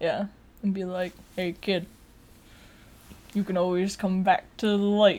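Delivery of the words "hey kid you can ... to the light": put-on gruff movie-star voice. Imitating Luke as a Force Ghost talking to Ben: Harrison Ford voice. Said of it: "That's my Harrison Ford voice".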